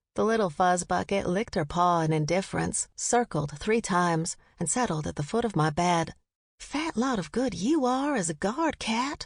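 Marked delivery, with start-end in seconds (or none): 6.5-9.2 whispered, higher. Narrator whispering to the cat at the foot of the bed: whisper. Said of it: "I whispered".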